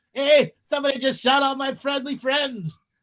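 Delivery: put-on, high, riled-up angry Canadian voice. Joking about how polite Canadians are, doing a mock-angry Canadian voice. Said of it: "there's some angry ass Canadians".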